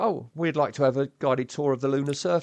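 plain

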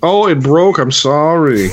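very slow, slightly high. Joking about a broken condom in a put-on voice: Tommy Wiseau voice. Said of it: "That was very Tommy Wiseau".

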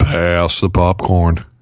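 rock-bottom bass, very deep, lowest-possible voice. Taking a turn in a contest over who can go deepest, deepest voice possible. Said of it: "I think [name]'s is the deepest".

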